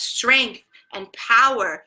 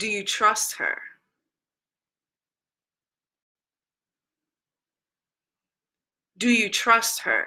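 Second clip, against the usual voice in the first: acted calm, grave, steady, serious tone; 3 dB quieter than usual. Retelling a friend's question about trusting a dog: imitating a calm but serious tone. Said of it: "she had this very calm but serious tone".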